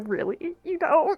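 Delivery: giggling through the words. Playing a character who giggles at her mother's reply: giggling while talking. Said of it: "Ori's gonna giggle".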